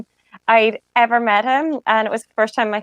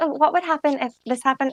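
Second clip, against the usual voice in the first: small, childlike put-on voice; 4 semitones higher, 4 dB quieter than usual. Describing a man role-playing both parts of a conversation: little kid's voice. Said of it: "he put on like a little kid's voice".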